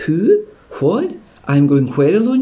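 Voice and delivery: startled, disbelieving, high, swooping pitch. Narrator voicing startled JJ as all eyes turn to her, in disbelief. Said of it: "She said in disbelief".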